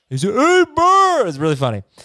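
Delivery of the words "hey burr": very high, raised, put-on voice talking through full mouth. Retelling a commercial's radio caller answer: imitating talking with mouth full. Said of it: "a mouthful of peanut butter".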